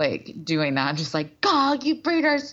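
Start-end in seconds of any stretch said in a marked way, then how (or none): 1.4-2.5 pitched-up, raised venting outburst. Mocking a remark seen on Twitter: imitating Billy Eichner. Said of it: "we were doing an impression of him".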